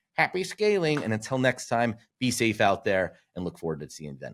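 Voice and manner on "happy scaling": very high, pushed-up voice. With Thomas absent, host signs off in Thomas voice. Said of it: "I will do my best Thomas voice".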